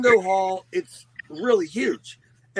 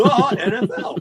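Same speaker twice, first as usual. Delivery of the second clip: heavy stress on the word "the"; 4 semitones higher, 4 dB louder than usual. Saying he watches the NFL, making it sound bigger: strong stress on the. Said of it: "I put the emphasis on the".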